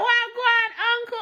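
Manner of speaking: high, drawn-out speech in Jamaican patois. Retelling going up to an older couple at the gate; greeting in patois. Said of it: "I agreed to them in patois".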